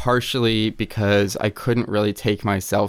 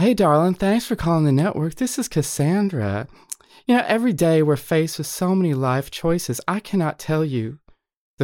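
high put-on Southern accent, psychic voice; 6 semitones higher than usual. Performing an old phone psychic persona on request: put-on Southern psychic voice as Cassandra. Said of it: "Can we talk to Cassandra?".

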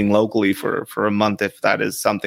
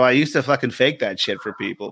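usual speaking voice

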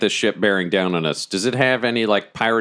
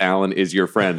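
plain

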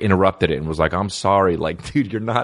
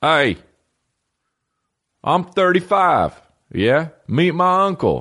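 Southern drawl, pitched up; 9 semitones higher than usual.

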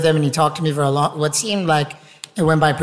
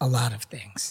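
put-on creepy tone, lower and quieter; 5 semitones lower, 10 dB quieter than usual. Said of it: "super creepy and goes".

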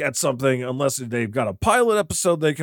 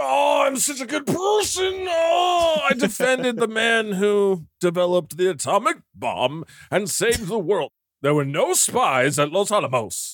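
put-on boastful voice, higher; 7 semitones higher than usual. Mocking the film's hero right after quoting a line: Oppenheimer impression. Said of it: "that was my Oppenheimer impersonation".

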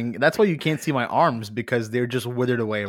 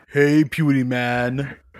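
put-on cartoon monster voice. Greeting the host after being introduced as a Monstar: Monstar impression. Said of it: "was that your best, uh, Monstar impression?".

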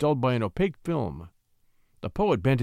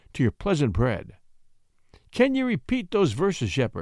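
plain reading voice

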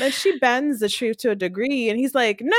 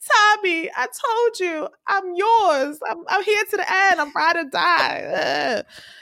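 acted tearful crybaby whine, high and whiny; 5 semitones higher than usual. Retelling a story scene, the speaker voices Keisha answering Tommy: imitating Keisha's crying voice. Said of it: "I like how you do her cry voice".

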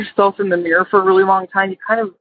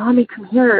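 put-on child whispering; 2 semitones higher than usual. Retelling how her daughter woke her at night: imitating a child whispering. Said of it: "and she's whispering".

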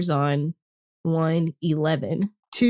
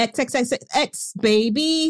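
high, very slow, stretched-out delivery; 6 semitones higher than usual. Doing an impression of Gabby's sign-off: imitating Gabby's sign-off. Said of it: "That's my impression of Gabby".

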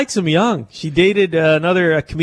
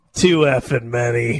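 put-on deadpan kid voice, lower; 4 semitones lower than usual. Retelling a little girl's answer from a video: imitating a deadpan kid. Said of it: "The kid's face is so deadpan".

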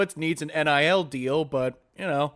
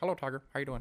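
very quiet, soft, in-character golfer voice murmur; 2 semitones lower, 12 dB quieter than usual. Imagining method acting and greeting Tiger himself while talking like Tiger Woods. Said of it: "I would talk like Tiger the whole way".

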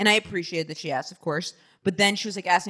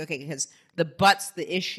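plain

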